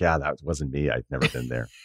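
acted flat deadpan. Retelling greeting someone who denied meeting you, imitating Stephanie McMahon's deadpan. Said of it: "she was just like deadpan".

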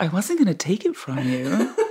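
put-on American accent with swooping pitch. Retelling a woman's reply after she switched back to her american accent. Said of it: "she went back to her American accent".

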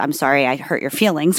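ordinary talk

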